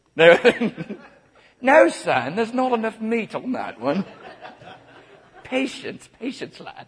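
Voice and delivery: very high, loud put-on British accent. The speaker voices the cannibals, British cannibal voice. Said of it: "the cannibals are going to be British".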